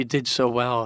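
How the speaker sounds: put-on upbeat Scottish accent. A speaker quotes their mom after losing a game six-nothing; imitating mom's Scottish accent. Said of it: "in her Scottish accent".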